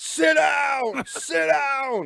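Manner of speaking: mock scream, shrill, very high and very slow. Retelling the flight attendants yelling at a standing passenger: imitating flight attendants screaming. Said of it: "the flight attendants are screaming".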